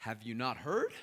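loud, sarcastic, incredulous tone. Retelling a disciple's reply to a stranger on the road: imitating a sarcastic question. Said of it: "the sarcasm".

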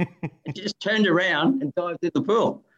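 laughing and giggling while speaking.

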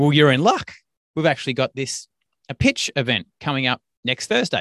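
ordinary talk, nothing marked

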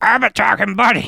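silly, rough, creaky put-on character voice. Podcast host does a character's voice: character voice. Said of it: "I'll do the voice".

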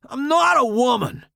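shrill, loud shout, pitched way up. Reading a story aloud, the narrator protests to the voices: shouting. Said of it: "but I shout".

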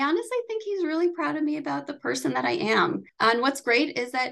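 on the verge of crying. Answering what the speaker's dad is most proud of, close to tears. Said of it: "i'm like tears right now".

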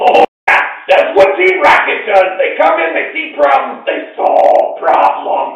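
tiny creature voice yelling, shrill, very high, very loud. A little furry creature yells from the ship: small furry creature yelling. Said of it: "a little furry creature still yelling from the ship".

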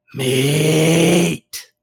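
hissed word in a hissing creature voice. A game master voices a tall predatory creature scratching her cheek, hissing. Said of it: "scratches at her cheek with one of her long sharp claws and hisses".

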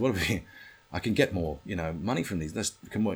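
normal talking voice

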